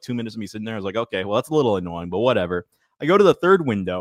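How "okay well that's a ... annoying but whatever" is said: ordinary delivery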